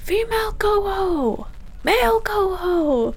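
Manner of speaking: high, slow shouting from a distance.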